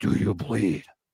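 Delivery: deep, breathy whisper. Retelling a Batman scene, repeating Batman's line in Batman deep voice. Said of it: "with his deep voice".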